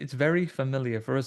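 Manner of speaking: normal talking voice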